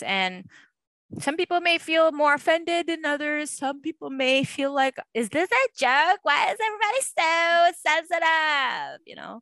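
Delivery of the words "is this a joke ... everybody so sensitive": put-on rich girl voice, higher, louder, slower.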